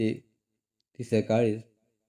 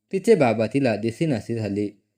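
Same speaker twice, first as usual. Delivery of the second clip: plain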